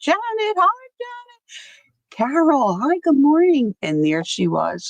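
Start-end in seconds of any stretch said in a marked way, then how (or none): 0.0-3.8 mock screaming, pitched way up. Retelling greeting someone after getting out of the car: imitating own screaming greeting. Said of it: "I'm screaming".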